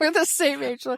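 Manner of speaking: talking through laughter. Pointing out to the other speaker that they are the same age, laughing while talking. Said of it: "I'm laughing at the math".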